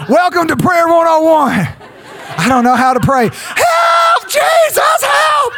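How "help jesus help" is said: very high-pitched, desperate cry. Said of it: "This man cried out".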